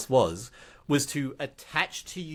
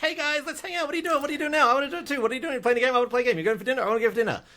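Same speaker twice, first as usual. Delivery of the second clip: giddy, very high, rushed, overeager babble; 11 semitones higher than usual. Acting out running over giddily to strangers: put-on giddy eagerness. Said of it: "run over giddily and be like".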